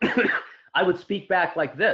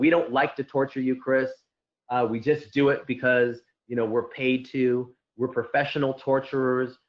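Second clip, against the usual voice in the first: ordinary talk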